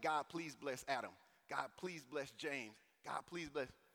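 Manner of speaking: put-on old man voice, prayerful tone. Retelling a movie scene of an old man praying at lockers: imitating an old man praying.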